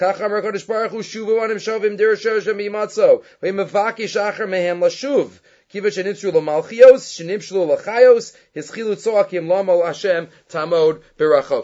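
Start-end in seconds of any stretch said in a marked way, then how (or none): none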